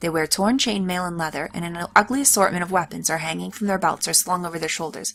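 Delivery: ordinary delivery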